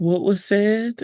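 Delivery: put-on sleepy, drowsy voice. Picturing a big ear forming out of the ground, in a sleepy voice. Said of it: "just hear like a sleepy voice being like".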